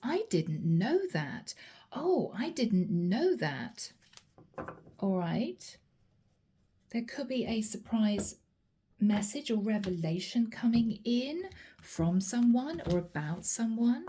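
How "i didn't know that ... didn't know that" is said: mock, very surprised, caught-off-guard exclamation. Relaying words someone is heard saying during a reading: imitating a very surprised voice. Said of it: "in a very surprised voice".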